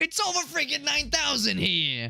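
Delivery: wild, very high, swooping cartoon character voice. Speaker describes what is coming next; Carl voice. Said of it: "I can never do a good Carl voice".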